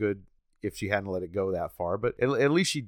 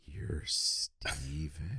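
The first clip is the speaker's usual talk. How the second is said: creepy put-on voice, lower and quieter; 5 semitones lower, 9 dB quieter than usual. Correcting how a line was quoted: creepier Tommy voice. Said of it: "Except he says it way cre-".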